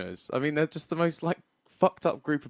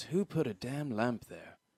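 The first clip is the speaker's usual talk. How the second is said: put-on, very deep, slow, low voice; 4 semitones lower, 9 dB quieter than usual. Acting out a character who just walks in, in a really deep voice. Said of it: "he's got a really deep voice".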